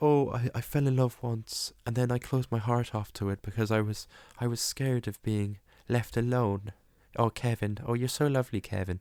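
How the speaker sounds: put-on, vague, lilting Irish accent. Recapping a film, quoting the old bird lady in a vague Irish accent. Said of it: "with some vague Irish accent for the whole film".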